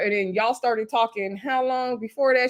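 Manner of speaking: normal talking voice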